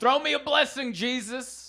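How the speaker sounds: high-pitched yell. Speaker retells what a woman yelled at him as he walked by, retelling her yell. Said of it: "That's what she yelled".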